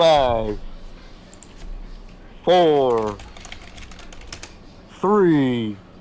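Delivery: very deep booming voice, drawn-out "four". Speaker counts down what the others hear, in a very deep booming voice. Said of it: "a very deep booming voice".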